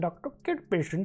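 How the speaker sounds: put-on Indian accent. Naming a doctor in the game, joking: put-on Indian accent. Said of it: "I want to say it in an Indian accent".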